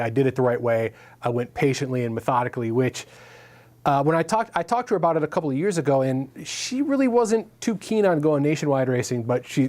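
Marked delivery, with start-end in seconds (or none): none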